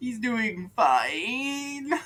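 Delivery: very unsure, very high, acted-out, "fine" drawn out. Recounting a film, quoting a man who has been living on a raft: imitating a very unsure voice. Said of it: "with the deepest amount of like unsure in his voice".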